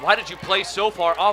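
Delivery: normal talking voice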